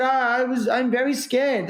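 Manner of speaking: put-on poorly done Peruvian accent. Retelling what Ignacio answered when you asked how to overcome fear, in a bad Peruvian accent as Ignacio. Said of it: "that's a bad Peruvian accent".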